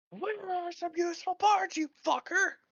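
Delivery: shrieking, furious yell, very loud and high-pitched. A game narrator voices Shadow Ruby yelling at a boat she is punching. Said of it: "Shadow Ruby just yelling at the boat".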